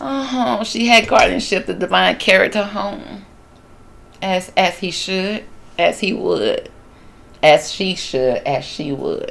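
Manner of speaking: choked-up voice on the verge of tears. Speaker continues reading the passage aloud, about to cry. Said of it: "I'm about to cry".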